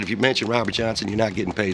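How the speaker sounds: usual speaking voice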